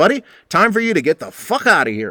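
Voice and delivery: put-on spoken with a Texas accent. Retelling a man telling off a drunk who bothered Sue: Texas accent. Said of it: "he does it with a Texas accent".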